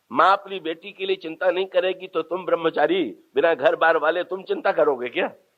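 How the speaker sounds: ordinary talk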